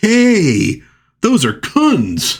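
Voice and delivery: excited, high, slow, startled comic-book shout.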